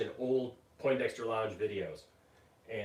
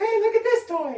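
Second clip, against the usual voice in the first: put-on shrill, very loud, very high little-kid voice; 13 dB louder than usual. Retelling a friend's old toy-review intro: imitating Landon's higher young voice. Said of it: "his voice was, like, so much higher back then".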